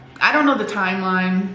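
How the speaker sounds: ordinary delivery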